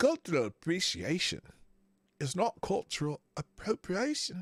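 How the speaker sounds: terrible put-on Irish accent, sing-song. Reading a quote from the Embassy of Ireland, terrible Irish accent. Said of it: "That's a terrible Irish accent".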